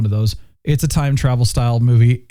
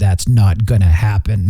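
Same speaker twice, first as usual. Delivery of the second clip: very intense, focused delivery at full intensity; 4 semitones lower than usual. Imitating Master Chief to compare him with the show's new actor: intense Master Chief voice. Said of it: "It was this very, you know, intense voice".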